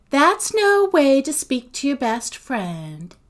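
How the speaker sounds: sugary, coaxing, high, sweet coo. At the door, she answers the voice telling her to go away, cooing. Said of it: "Sophie cooed".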